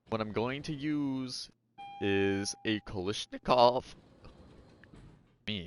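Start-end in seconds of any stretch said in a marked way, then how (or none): 2.8-5.7 voice breaking mid-word. Mid-explanation, the speaker's voice suddenly cracks: voice cracking. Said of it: "That was a voice crack".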